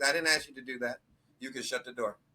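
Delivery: mock dry deadpan, flat, dead serious. Retelling a woman's reply to having the door held: imitating a deadpan delivery. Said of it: "she said it with a straight face".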